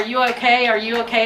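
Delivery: plain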